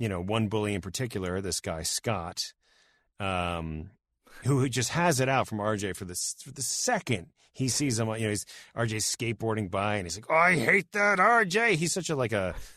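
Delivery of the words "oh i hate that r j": put-on grumpy cartoon man voice, high and slow. Retelling how a bully reacts to a skateboarder: imitating a grouchy cartoon man. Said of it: "like a grouchy cartoon man".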